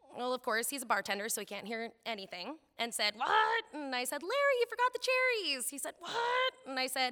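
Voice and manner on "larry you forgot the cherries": put-on very high, loud two-year-old toddler holler. Retelling hollering down the bar at larry as a two-year-old, imitating a toddler hollering. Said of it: "in my two-year-old voice, hollered".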